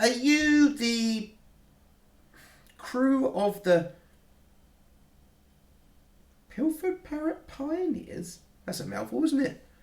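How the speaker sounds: put-on high, slow helium-voiced alien boy voice. Voicing a short alien boy greeting the crew at the door, high-pitched helium voice. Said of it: "it sounds like someone on helium".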